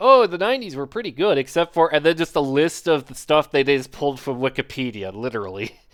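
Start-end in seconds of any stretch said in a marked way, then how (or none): 0.0-1.9 loud, mock scoffing, derisive tone. Retelling a Let's Player's comment on a game: imitating a mocking tone. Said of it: "And they were just mocking it".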